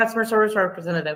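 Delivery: said really fast, rushed and rattled off. Retelling answering an automated phone menu: saying it really fast. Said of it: "I just say it really fast for it to catch it".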